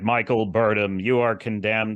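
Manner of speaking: judge's voice ringing and echoey, as in a hall. Recounting a show scene, quoting the judge addressing Michael Burnham, echoey judge voice. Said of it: "this judge with this echoey voice".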